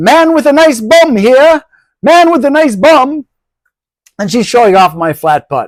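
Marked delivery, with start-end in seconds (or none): 0.0-3.3 very high, slow put-on British accent. Retelling a festival saleswoman calling out to passersby: imitating a British accent. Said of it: "basically uses a British accent".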